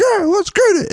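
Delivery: put-on childlike scream. Recalling watching the Bills game on his phone, retelling screaming like a 10-year-old. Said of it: "I'm like screaming like a 10-year-old".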